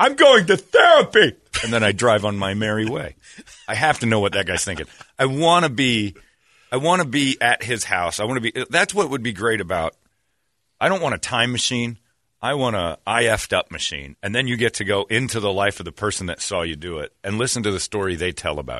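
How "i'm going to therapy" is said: loud, drawn-out high shout. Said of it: "So I just shout at you".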